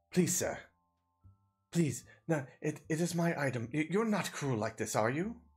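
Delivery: charming, pleading delivery. Voicing a charming character with big puppy eyes who begs the player: charming pleading. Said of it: "very charming, and he's like".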